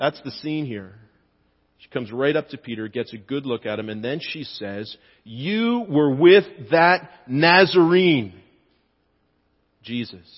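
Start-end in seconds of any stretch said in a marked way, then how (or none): 5.2-10.3 put-on, slow, scornful, contemptuous, disdainful tone. Retelling the scene, the speaker voices the woman confronting Peter, retelling with disdain. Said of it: "She says it with some disdain".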